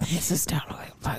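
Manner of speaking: whispered, soft mutter.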